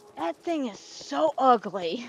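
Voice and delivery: whispered speech. Recalling watching anime with Eric when the mascot appeared: retelling a whisper. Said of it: "just whispered".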